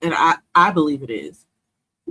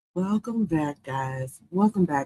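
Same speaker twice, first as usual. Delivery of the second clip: put-on radio announcer voice, quieter; 5 dB quieter than usual. Host welcoming listeners back to the show, mock radio voice. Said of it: "I'm working on my radio voice here".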